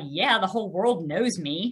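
acted, cocky, smug, self-satisfied bragging "yeah". Retelling a reply to a stranger at a meeting: imitating own cocky yeah. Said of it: "I said it in such a way like".

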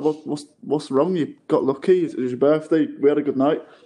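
ordinary delivery

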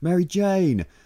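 high-pitched yelling.

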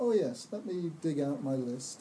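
ordinary delivery

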